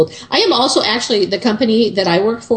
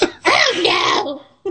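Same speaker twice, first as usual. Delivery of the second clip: very high, swooping fake woman voice by a man; 12 semitones higher, 3 dB quieter than usual. Showing off impressions, a speaker does Monty Python men talking like women. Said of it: "Monty Python men talking like women".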